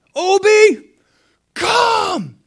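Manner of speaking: put-on shrill, very high, very loud commanding big-boy voice. Retelling how Malachi kept calling Obi to come; imitating Malachi's big boy voice. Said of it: "he does it several times".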